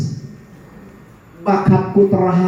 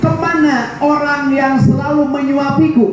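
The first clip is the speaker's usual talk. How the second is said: high shouted call. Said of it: "sambil teriak-teriak".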